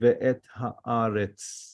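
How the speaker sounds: slow, careful, drawn-out reading of ve'et haaretz. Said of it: "Ve'et is two words".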